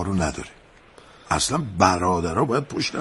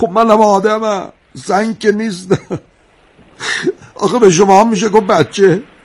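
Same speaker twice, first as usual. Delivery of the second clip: crying while speaking.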